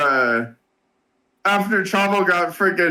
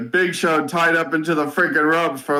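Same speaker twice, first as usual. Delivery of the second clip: normal talking voice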